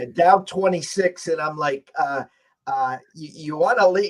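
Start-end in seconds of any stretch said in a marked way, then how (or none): 3.1-4.1 put-on dry, needling, sarcastic jab. Retelling own remark at a game when down twenty-six: retelling own sarcastic question. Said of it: "I'm sarcastically".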